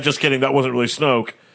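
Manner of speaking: ordinary talk, nothing marked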